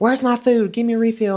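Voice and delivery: very high, shrill, demanding scream. Retelling how classmates acted as customers on the float: imitating customers screaming. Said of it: "screaming at us".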